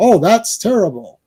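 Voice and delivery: wooden, unconvincing bad-actor delivery. Showing how a badly acted reaction to tragic news sounds: imitating bad acting. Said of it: "that's bad acting".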